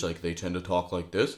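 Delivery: very low, soft voice, bottom of range. Explaining speaking habits, showing how many people talk too low in their range. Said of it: "talk a little bit too low in their range".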